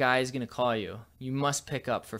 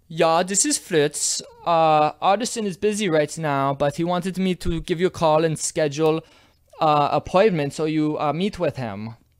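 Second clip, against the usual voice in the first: very loud, put-on German accent; 4 semitones higher, 9 dB louder than usual. Posing as an assistant on a phone call, in put-on german accent.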